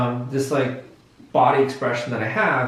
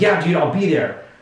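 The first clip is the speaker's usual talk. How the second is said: really confident, sure-of-himself delivery; 2 semitones higher than usual. Explaining how someone in a social situation agrees to show up, confident tone. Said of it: "they have a really confident tone of voice".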